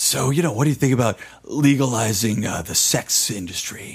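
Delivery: rough, deep, gravelly rasp. Retelling how a man asked an unexpected question: imitating a gravelly voice. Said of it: "But in a very gravelly voice".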